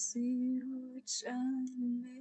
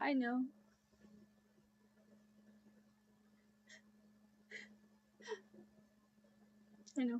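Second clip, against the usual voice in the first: tearful speech, much lower pitch; 3 semitones lower, 4 dB quieter than usual. Apologizing for crying so much, speaking while crying. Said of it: "I'm really sorry for crying so much".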